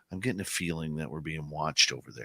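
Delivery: confiding, hushed, quiet stage whisper under the breath. Retelling a friend's remark in the forest about being watched: imitating Mike half-whispering. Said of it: "Kinda whispers it to me".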